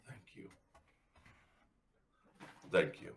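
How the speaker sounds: soft, hushed, breathy whisper. Showing what they would say into someone's ear, whispering. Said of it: "just gonna whisper in their ear".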